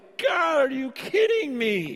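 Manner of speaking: awestruck, amazed outburst, high and swooping. Retelling reading Romans alone in a room: own amazed exclamation out loud. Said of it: "I'm just out loud like".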